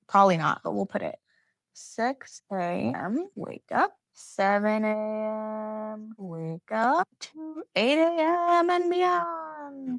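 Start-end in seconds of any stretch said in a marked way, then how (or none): 7.2-10.0 heroic proclaiming voice, way up high. Listing wake-up times, ending the list in a Buzz Lightyear voice. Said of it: "said in my Buzz Lightyear voice".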